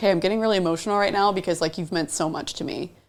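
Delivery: ordinary delivery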